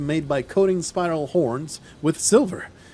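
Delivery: ordinary delivery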